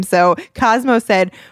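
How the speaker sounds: plain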